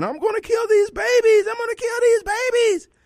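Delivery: shrill, delighted, very high gleeful shriek. Describing a woman on the ground and acting out her words: retelling a gleeful scream. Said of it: "She's screaming".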